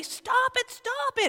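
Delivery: frightened parent voice, very high and alarmed. Describing a parent whose child runs near a lit stove, imitating a scared, overreacting parent. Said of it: "A little bit of an overreaction maybe, but they're scared".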